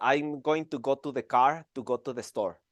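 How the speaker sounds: strong Mexican accent. A Mexican speaker demonstrates how his English first sounded: heavy Mexican accent. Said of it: "my original English was like this".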